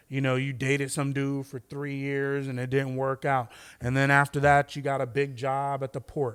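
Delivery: ordinary talk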